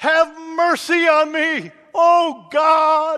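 very loud, slow, drawn-out crying-out shout. Acting out how David cried out to God, shouted, crying out. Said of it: "He didn't whisper it. He shouted it".

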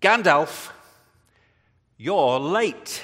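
loud, put-on English film accent. Quoting a Lord of the Rings line, the speaker puts on an English accent. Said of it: "I can put an English accent on there".

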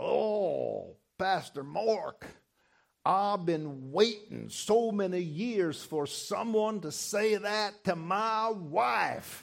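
very slow Southern drawl with drawn-out "oh". Pastor retelling what a gentleman who came up to him said, Lou's southern drawl. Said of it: "in that southern drawl".

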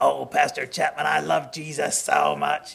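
slow, rough, creaky, gravelly put-on rasp. The speaker imitates an unwell man who often addressed him; imitating a gravelly voice. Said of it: "he always had this gravelly voice".

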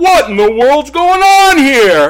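stern, booming, very high and loud. Retelling the father walking in on the basement tomato fight, booming voice. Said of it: "his booming voice says".

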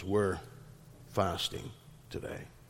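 mock mournful whisper, barely audible. Acting out wedding guests refusing the meal: imitating mournful tones. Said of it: "with a long face and with mournful tones".

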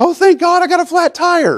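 very high, drawn-out, overjoyed excited gush. Acting out a hypothetical overexcited reaction, mock-excited. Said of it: "you're excited and go".

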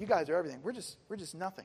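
usual speaking voice

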